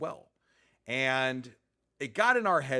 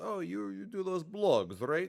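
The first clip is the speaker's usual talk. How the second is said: heavy, thick put-on Eastern European accent, slow; 6 semitones higher than usual. Retelling how the maintenance man recognized him; thick Eastern European accent. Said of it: "he's a thick Eastern European accent".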